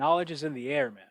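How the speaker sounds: put-on English spoken with a Brazilian Portuguese accent. Retelling what a man answered when asked how he knows, in a Brazilian Portuguese accent. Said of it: "Brazilian Portuguese accent".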